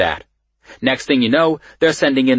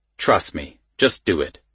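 plain reading voice

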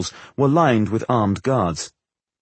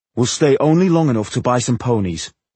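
usual speaking voice

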